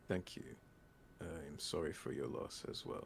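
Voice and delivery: very dry, dead flat, no feeling. Voicing a character answering an apology: very dry delivery. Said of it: "he says very dryly".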